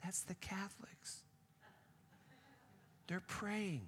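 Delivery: soft, high, hushed guide voice.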